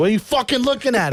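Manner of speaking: very high, mad, pissed-off voice. Retelling Joe rolling down the window: imitating a mad friend. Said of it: "getting all mad".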